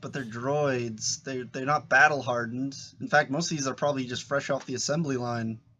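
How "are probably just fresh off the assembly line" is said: ordinary talk, nothing marked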